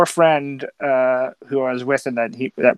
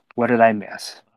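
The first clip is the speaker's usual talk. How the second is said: beaten, crestfallen, defeated, deflated sound; 2 semitones lower than usual. Retelling how he called back after missing the game, imitating a defeated voice. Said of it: "with this just defeated sound in his voice".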